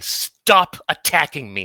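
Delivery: very loud, commanding, authoritative delivery. Voicing a character who commands an attacker to stop: very authoritative tone. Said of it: "in a very authoritative tone".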